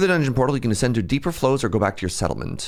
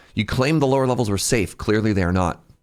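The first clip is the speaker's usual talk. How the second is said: ordinary delivery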